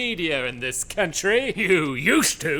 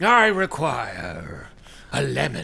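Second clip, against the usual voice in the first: growled, deep monster voice; 6 semitones lower than usual. After a silence, a creature finally speaks, in a growling creature voice. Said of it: "the creature growled".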